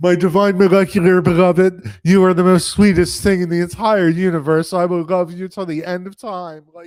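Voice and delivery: very loud, lovestruck, gushing robot voice. Quoting a love-struck robot character's lines to a girl: gushing lovestruck robot, imitated. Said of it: "he just love bombs her".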